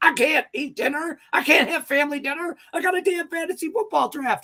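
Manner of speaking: play-acted shrill yelling, very high pitch. Speaker retells yelling at Mandy during a fantasy football draft: retelling a yell. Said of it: "I'm yelling".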